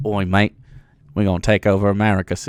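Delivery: very low, deep, clumsy fake Australian accent. Joking about what is happening in australia, voicing imagined warlords: bad australian accent. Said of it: "I'm so bad at an Australian accent".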